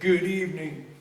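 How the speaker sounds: put-on deep, creepy voice. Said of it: "A deep, creepy ass f***ing voice said".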